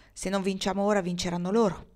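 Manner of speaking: plain reading voice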